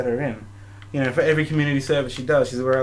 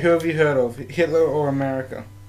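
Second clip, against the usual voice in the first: ordinary talk, nothing marked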